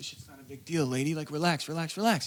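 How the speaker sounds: hushed, voiced stage half-whisper. Retelling an assistant calming a woman down: imitating someone half-whispering. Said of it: "whispering in her ear".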